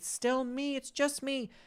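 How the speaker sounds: very high, desperate, begging plea. Retelling a film character's final scene: imitating a pleading plea.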